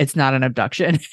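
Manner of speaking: put-on deadpan delivery. Retelling how a man answered a woman's question, a retold deadpan reply.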